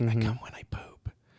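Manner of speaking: soft, hushed whisper under the breath. Showing what gets said to prank telemarketers: whispering. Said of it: "I like to whisper stuff".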